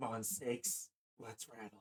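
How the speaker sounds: very quiet, eerie, strange half-whisper. Voicing a townsperson who steps forward to the party: strange half-whispering voice. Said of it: "speaks in a strange, whispering voice".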